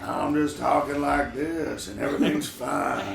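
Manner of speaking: calm, easygoing, slow, rough delivery. Imitating Al Pacino in Insomnia before he snaps: imitating Al Pacino talking calmly. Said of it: "where he's just doing, like".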